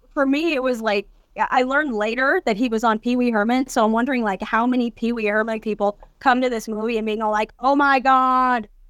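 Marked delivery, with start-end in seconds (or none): 7.6-8.7 put-on, pretend freaking-out shock, much slower. Imagining fans of an old kids' show reacting to an actor, mock freaking out. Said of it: "totally freaking".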